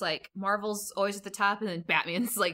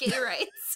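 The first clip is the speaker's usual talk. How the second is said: put-on monster voice; 3 semitones higher than usual. Joking about a Pride Month Hulk comic: Hulk voice. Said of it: "Hulk says".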